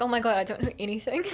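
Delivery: ordinary delivery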